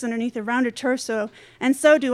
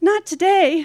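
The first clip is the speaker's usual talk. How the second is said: trembling, unsteady, shaky, high-pitched voice; 5 semitones higher, 3 dB louder than usual. Narrator, turning down her boyfriend's lunch invitation on the phone, voice shaking. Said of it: "my voice shaking".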